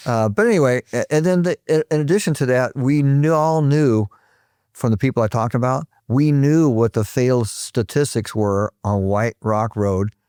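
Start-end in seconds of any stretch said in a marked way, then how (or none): 6.1-10.1 very slow, drawn out, careful, deliberate delivery. Explaining known road failure statistics to others: said very slowly. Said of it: "you notice I said it very slowly".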